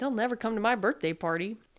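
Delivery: plain reading voice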